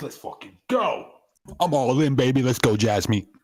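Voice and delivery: thrilled, slow, drawn-out excited cheering. Going all in and cheering to jasmine, excited voice. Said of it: "You can just hear the excitement in my voice".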